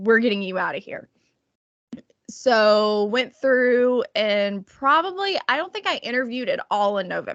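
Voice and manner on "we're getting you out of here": ordinary delivery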